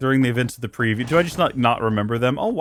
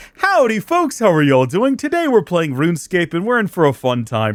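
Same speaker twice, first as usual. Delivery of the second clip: mock cheerful host voice, higher; 5 semitones higher, 3 dB louder than usual. Showing how the same speaker sounds in other videos: imitating own upbeat video intro. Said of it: "I don't sound whiny in other videos".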